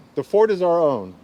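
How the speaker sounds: ordinary talk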